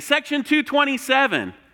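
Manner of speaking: mock shrill, very high-pitched yell. Retelling how the speaker fooled around and yelled at their section: retelling a yell. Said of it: "I yell at my section".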